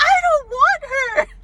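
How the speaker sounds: put-on shrill, loud, very high-pitched little girl's shriek. A substitute teacher recounts a little girl's outburst on meeting her, imitating a screaming little girl. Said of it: "And she screamed".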